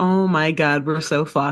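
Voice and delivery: put-on exasperated, despairing groan. Retelling a lawyer burying his face in his hands: imitating despair. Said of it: "his hands over his face and is like".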